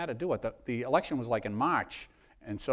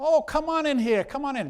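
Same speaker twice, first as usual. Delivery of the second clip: slight put-on Irish accent, higher and louder; 14 semitones higher, 6 dB louder than usual. Retelling a woman greeting him at her door: light irish brogue. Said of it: "a little Irish brogue".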